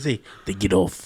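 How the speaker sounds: low, dropped, dramatic movie-style voice. Joking about a shoe-stealing attacker, doing the Taken voice. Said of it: "the taken voice".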